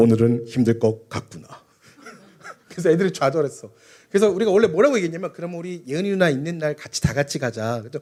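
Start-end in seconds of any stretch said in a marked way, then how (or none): 0.0-1.5 solemn, reverent voice, very low and slow. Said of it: "거룩한 목소리로 이야기했어요".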